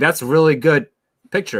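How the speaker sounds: acted, insincere, sarcastic tone, pitched high. Retelling a girl's reply to an ugly drawing: imitating a sarcastic compliment. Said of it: "she was being sarcastic".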